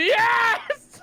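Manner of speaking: very high, shrill shouting shriek. Acting out a character's reaction to a stabbing: screaming. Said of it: "I scream".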